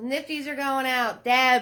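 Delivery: high-pitched, loud yell. Host calling out to deb, who has no sound, yelling. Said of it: "I don't know why I'm yelling".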